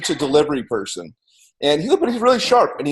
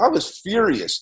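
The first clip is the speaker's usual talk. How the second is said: ordinary talk, nothing marked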